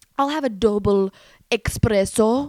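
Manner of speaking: fake Italian accent, put on. Retelling how dad orders a drink in Italy, dad's fake Italian accent. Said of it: "he just automatically starts speaking in an accent".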